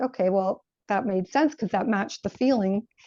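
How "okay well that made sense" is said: usual speaking voice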